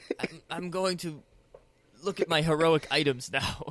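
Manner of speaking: anxious, faltering, stammering nervous voice. Retelling what Amir said as he walks over: nervous Amir voice. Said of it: "And he's just nervous".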